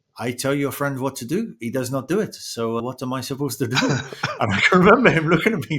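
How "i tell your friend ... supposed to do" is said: put-on French accent, instructor voice. Quoting what an instructor said to him, in a put-on French accent. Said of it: "if I'm allowed to do a French accent".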